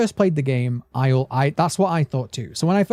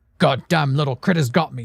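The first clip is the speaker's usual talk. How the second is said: put-on annoyed, angry character voice. Imagining what Dog Day would say if he were Rich, mock-angry Rich impression. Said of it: "I'm going to do an impression of Rich".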